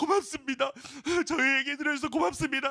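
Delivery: sobbing through words, high, tearful crying. Retelling girls thanking a stranger for listening, imitating crying while thanking. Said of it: "그 애들이 또 울면서".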